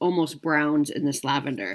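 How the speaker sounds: plain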